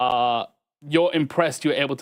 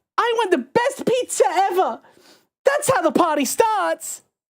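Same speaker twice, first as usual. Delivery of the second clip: eager, excited little bird voice, very high; 3 dB louder than usual. Voicing a canary character who hobbles over: excited canary character. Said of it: "hobbles over excited and goes".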